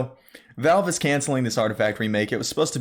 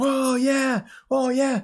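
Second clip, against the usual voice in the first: high, excited, hyped crowd whoop. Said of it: "the crowd's getting all hyped".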